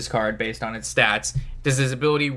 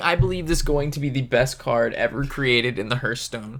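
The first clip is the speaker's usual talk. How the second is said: ordinary talk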